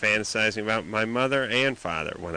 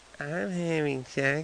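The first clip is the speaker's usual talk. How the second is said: put-on little girl voice, quieter; 6 semitones higher, 3 dB quieter than usual. Retelling what a woman said, in the little girl voice. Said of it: "she went into the little girl voice".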